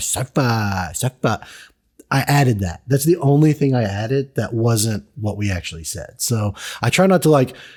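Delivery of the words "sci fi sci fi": snide, teasing, sarcastic mocking tone. Recounting a line you added to an episode edit, mock-sarcastic. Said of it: "like all sarcastic about it".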